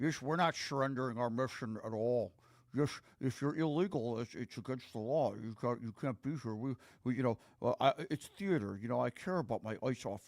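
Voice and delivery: garbled, stumbling, mushy mumble, words run together. Mocking a speaker from a clip who sounds like mush: mocking mushy mumbling imitation. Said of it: "sounds like mush when he talks".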